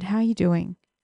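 mock deep, heartfelt tone. Retelling a question the brother's partner asked at a funeral: imitating a deep, heartfelt question. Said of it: "that deep, heartfelt".

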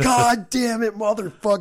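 high, all-out, full-tilt yell. Recounting trying to flip an overturned truck alone, retelling a yell. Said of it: "I'm fucking yelling".

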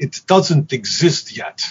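put-on Polish accent. Quoting the music director who offered him the job, Thomas Mihalik's Polish accent. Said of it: "in his Polish accent".

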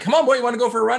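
high, eager, excited coaxing voice. Comparing the other speaker's hype voice to talking to a dog: imitating hyping up a dog. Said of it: "like a dog where you're like".

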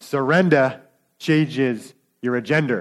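accent from Gloucester. A speaker addressing an audience, making a point in a thick Gloucester accent. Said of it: "in a nice thick Gloucester accent".

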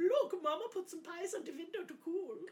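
very high, squeaky, silly cartoon voice. Doing a stupid voice from an old cartoon: silly put-on cartoon voice. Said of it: "I really love doing stupid voices. And that is from an old cartoon".

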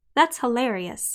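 ordinary talk

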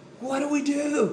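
put-on high screaming.

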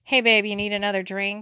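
easy, self-assured, smooth and confident. Retelling waiting tables, talking to college guys: imitating own smooth confident line. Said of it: "I could say that so smoothly and confidently".

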